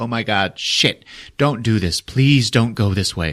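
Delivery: put-on pleading voice. Retelling a scene, acting out Rey's lines: imitating Rey pleading. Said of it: "And she's like".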